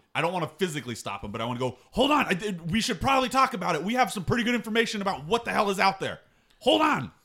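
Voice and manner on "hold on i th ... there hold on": very high shout. Calling to a companion heading for the gate: yelling to stop someone. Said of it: "Kevo, uh, yelling at Megalides".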